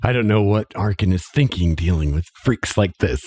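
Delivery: grumbling, complaining mutter, half to himself. A man remarks to himself during a scene, muttering under his breath. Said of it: "he mutters under his breath".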